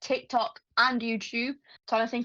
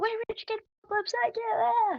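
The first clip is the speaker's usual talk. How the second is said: very high, rushed scream from a worn-out voice; 12 semitones higher than usual. Band member describing screaming at the end of their set: retelling a scream with a worn-out voice. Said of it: "I scream like whatever's left of my voice".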